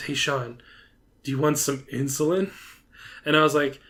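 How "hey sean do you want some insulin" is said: put-on whisper, lower and quieter. Retelling a coworker's question during a quiet meeting: imitating a whisper. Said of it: "he whispers to me".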